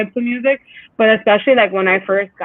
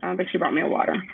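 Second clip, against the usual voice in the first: plain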